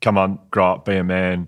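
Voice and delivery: plain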